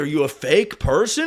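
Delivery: ordinary talk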